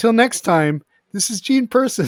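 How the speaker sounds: cracking up mid-sentence. Trying again to say the sign-off: laughing while talking. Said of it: "Now it's happening to me".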